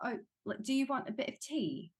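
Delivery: cliché British accent. Actor explaining how they prepare an accent for set, demonstrating a stereotypical British accent. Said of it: "if I was doing a British accent".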